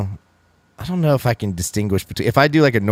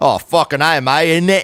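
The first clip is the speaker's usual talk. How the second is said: fake British accent, higher; 6 semitones higher than usual. Acting out how someone would react to a name drop: put-on British accent. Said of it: "funnier accent to do".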